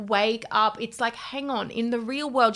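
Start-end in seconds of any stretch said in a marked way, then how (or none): none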